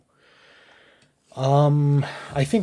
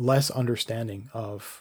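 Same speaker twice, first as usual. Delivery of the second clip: usual speaking voice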